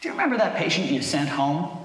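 put-on plain, businesslike, matter-of-fact, slightly high voice. An emergency physician quotes another nurse's question, retelling it matter-of-factly. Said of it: "The other nurse asked matter-of-factly".

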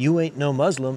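usual speaking voice

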